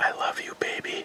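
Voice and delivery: very quiet, soft, breathy whisper. Turning off the lights and whispering to someone so only they hear. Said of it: "I'm going to whisper so only you hear it".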